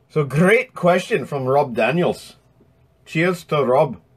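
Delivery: put-on Scottish accent, carried throughout. Thanking a listener for his question on the show, in a put-on Scottish accent. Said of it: "my Scottish accent's".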